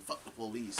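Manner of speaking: usual speaking voice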